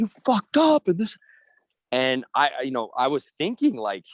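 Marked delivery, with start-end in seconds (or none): 0.0-0.9 put-on screaming, higher and louder. Imitating a parent at their kid's missed free throw: imitating a parent screaming. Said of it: "screaming at 'em".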